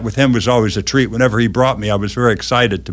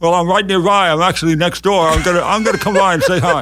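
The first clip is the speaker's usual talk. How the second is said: crazy put-on voice, much higher, faster; 7 semitones higher than usual. Acting out the supposed mayor from a story, in a crazy put-on voice. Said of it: "did some crazy voice".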